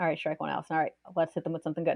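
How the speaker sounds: soft muttering to oneself.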